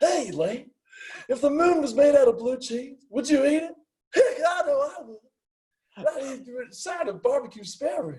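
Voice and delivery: acted announcer voice, very high-pitched. Asked to do one, the speaker gives a Harry Caray impression. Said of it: "I do like an impression of Dillard's kind of like I, you know, Harry Carey here".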